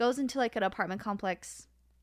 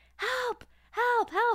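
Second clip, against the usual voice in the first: frantic cries, pitched very high, screaming; 13 semitones higher than usual. Retelling how he screamed while two kids were on him, retelling a scream for help. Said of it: "so he starts screaming like".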